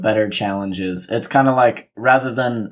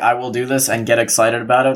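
ordinary talk, nothing marked

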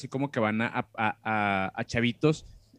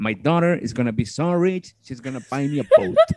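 loud, put-on Texan Southern US accent; 2 semitones higher, 7 dB louder than usual. Quoting a Southern man about his daughter, put-on Southern US accent. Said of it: "voy a tratar de hacer un acento sureño".

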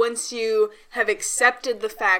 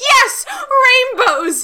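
put-on excitement, higher and louder; 9 dB louder than usual. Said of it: "I was very excited 'cause I was just like".

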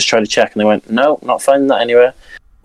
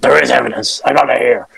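rough, creaky, scraped-out voice. Retelling a podcast argument: imitating Alex Jones. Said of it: "I love your impression".

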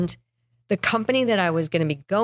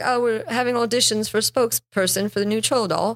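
stagey put-on British accent; 4 semitones higher than usual. Retelling an act built around a troll doll: imitating a put-on british voice. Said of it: "he did this British voice".

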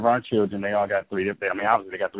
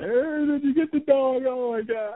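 put-on bawling, tearful crying voice, higher. Retelling the boys' words when he came in: imitating bawling boys. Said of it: "they're just bawling".

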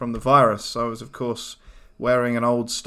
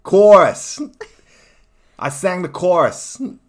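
put-on Boston accent, very loud and pitched up; 7 semitones higher, 9 dB louder than usual. Given the next word, saying it in your Boston accent. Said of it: "I'll say it in my Boston accent".

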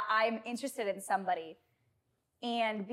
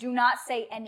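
ordinary talk

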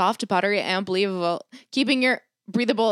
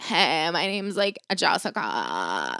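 put-on very slow, drawn-out, swooping annoying girl voice; 4 semitones lower, 5 dB quieter than usual. Complaining about how some girls talk, imitating a girl's voice. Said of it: "talks like this".

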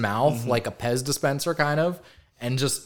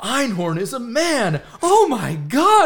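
very slow, drawn-out, swooping, acted-out thrilled tone; 9 semitones higher, 5 dB louder than usual. Retelling a funny reveal moment when he finds out, acting out being excited. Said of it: "And he's all excited".

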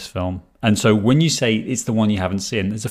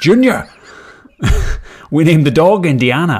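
put-on loud, high-pitched, strong Scottish accent; 7 semitones higher, 8 dB louder than usual. Doing a Sean Connery impression with a line from Indiana Jones. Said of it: "I can do Sean Connery".

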